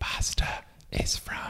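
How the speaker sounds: hushed, soft, breathy ASMR whisper. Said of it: "talking about it with A S M R".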